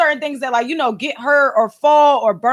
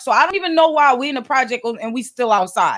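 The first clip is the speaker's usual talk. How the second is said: normal talking voice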